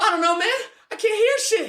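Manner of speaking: voice jumped way up, very high pitch. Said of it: "my voice was so high".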